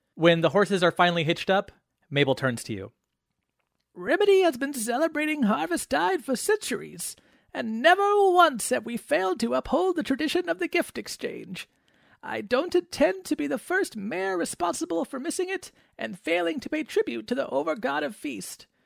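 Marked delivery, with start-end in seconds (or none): 3.9-18.7 very high, creaky, frail, tiny little voice. The mayor turns to the players and addresses them, in Mabel's tiny frail voice. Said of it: "because she's very little. / [name] looks up, because she's very little. / I am the mayor of [name]. / I'm quite frail".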